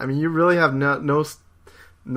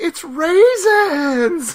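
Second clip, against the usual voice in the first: put-on high-pitched, slow, loud, thrilled child-like cry. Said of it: "It's, like, all excited".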